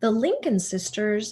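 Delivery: ordinary delivery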